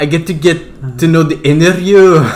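put-on Indian-sounding accent. Trying to copy how she said it in the movie, speaker uses an Indian-sounding accent. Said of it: "that sounded Indian".

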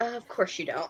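low, hushed mutter under the breath. Recapping a scene, acting out a woman's retort, mock muttering. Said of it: "she kind of mutters".

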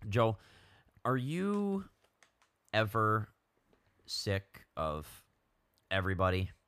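loud, slow commercial ad-read voice. Asking the other speaker a simple question, sounding like an ad read. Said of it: "It sounds like an ad read".

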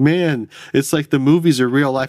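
put-on near-giddy excitement. Describing a movie scene, the speaker quotes the Donald character: imitating Donald's almost giddy tone. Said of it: "He just has this tone where he's like almost kind of giddy about it".

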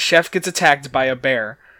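ordinary talk, nothing marked

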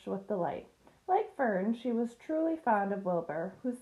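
plain

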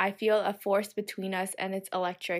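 ordinary delivery

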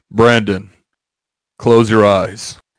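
deep, heavy, dropped announcer tone. Acting out an imagined scene for the listener, in a deep booming voice. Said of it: "in my deep booming voice".

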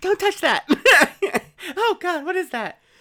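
very high, very loud, shrill, terrified neurotic ghost voice. Playing the neurotic ghost in a haunted mansion bit, terrified neurotic ghost voice. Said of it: "we have the neurotic ghost".

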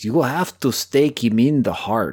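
put-on clumsy, inaccurate South American accent. Discussing a movie, doing a terrible Van Helsing impression. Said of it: "that was a terrible impression".

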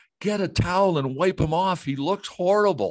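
shrill, very high-pitched scream. Retelling how a producer screamed at the stage manager: imitating someone screaming. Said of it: "he's screaming at her".

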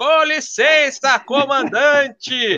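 put-on shrill, very high yelling. Retelling a flight attendant entering the cockpit, imitating someone shouting. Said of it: "ela gritava".

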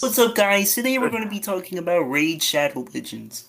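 high frog puppet voice. Recording an entire ad for Raid Shadow Legends just to see what they say, in a Kermit voice. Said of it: "in the Kermit voice".

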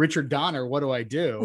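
usual speaking voice

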